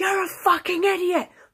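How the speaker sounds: high, mock parting yell. Retelling a customer yelling from the middle of the street: imitating a customer yelling in the street. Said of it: "even when she's outside the shop in the middle of the street".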